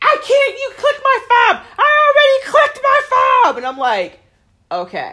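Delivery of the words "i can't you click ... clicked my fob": very high, loud, shrill screaming. Retelling what a stuck woman shouted about her fob, imitating a woman screaming. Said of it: "She starts screaming".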